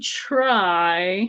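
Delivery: strong stress on the word try. Answering a question about reopening a shop: stress on TRY. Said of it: "I'm stressing the word try".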